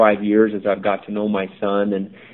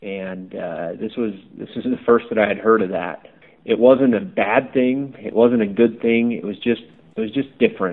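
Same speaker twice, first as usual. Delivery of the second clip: ordinary delivery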